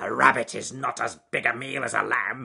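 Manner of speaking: snarled out loud. A narrator reads the wolf's words as he chases the rabbit, snarling. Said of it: "he snarled".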